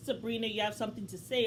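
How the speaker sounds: ordinary talk, nothing marked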